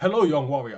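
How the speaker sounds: put-on very loud, booming voice of old Chinese films. Joking about how the recording command makes you sound, old Chinese film voice. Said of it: "you'll be talking like out of those old Chinese films".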